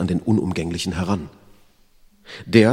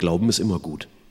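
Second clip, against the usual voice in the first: ordinary delivery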